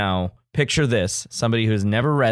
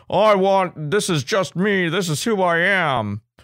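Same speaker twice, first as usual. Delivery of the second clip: terrible put-on American accent, pitched up; 9 semitones higher than usual. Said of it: "in his terrible American accent".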